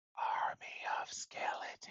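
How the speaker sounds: whispered words. Voicing a character creeping up to a sleeping companion: whispering in character. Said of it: "she just whispers in his direction".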